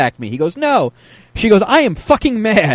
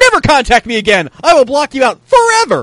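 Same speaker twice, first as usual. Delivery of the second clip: mock raised voice, pitched up; 5 semitones higher, 4 dB louder than usual. Reading aloud a man's message typed in caps lock, with a raised voice. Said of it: "so I raised my voice".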